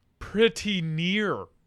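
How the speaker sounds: plain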